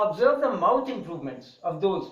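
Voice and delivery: ordinary talk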